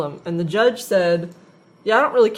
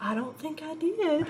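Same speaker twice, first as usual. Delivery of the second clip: put-on tiny, very quiet, high little grandma voice; 8 semitones higher, 11 dB quieter than usual. Retelling a returned missed call, the speaker imitates the caller in a tiny Eastern Kentucky grandma voice. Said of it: "little tiny, like, Eastern Kentucky grandma".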